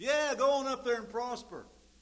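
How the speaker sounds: mock, very high, loud, scornful sarcastic jeer. Acting out how the prophet answered Ahab, imitating a mocking, sarcastic tone. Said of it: "He said it in a mocking, sarcastic way".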